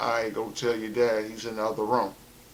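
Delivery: normal talking voice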